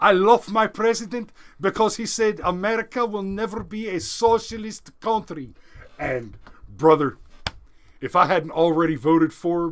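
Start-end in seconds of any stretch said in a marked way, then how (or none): 0.0-5.5 put-on Venezuelan accent, pitched up. Quoting a candidate met at an event: imitating a Venezuelan accent. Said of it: "in her fantastic Venezuelan accent".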